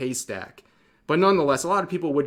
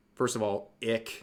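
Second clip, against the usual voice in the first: plain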